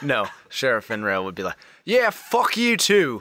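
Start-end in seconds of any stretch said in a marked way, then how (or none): 1.8-3.2 put-on high-pitched British accent. A game master voices the sheriff replying to an insult: Sheriff Finrail, British accent. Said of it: "That was British".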